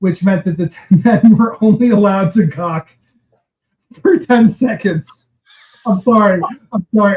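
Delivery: talking through laughter. Explaining a ten-second staring rule for models, laughing while talking. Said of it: "I don't know why I'm laughing".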